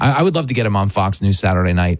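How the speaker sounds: normal talking voice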